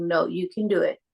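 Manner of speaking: calm, steady, grounding fatherly tone. Retelling an emergency, the speaker quotes the husband's encouragement, imitating his grounding fatherly voice. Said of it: "in his most like grounding, like husband, fatherly voice".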